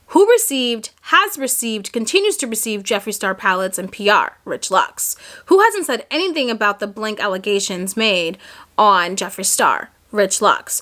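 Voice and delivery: ordinary talk, nothing marked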